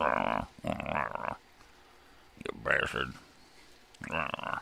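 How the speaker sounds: rough, low, very slow growling dog voice. Speaker acts out his dog agreeing with him, in a grunting dog voice. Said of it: "my dog just grunted in agreement. He's like".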